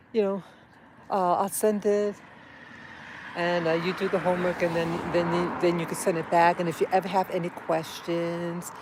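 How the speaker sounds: ordinary talk, nothing marked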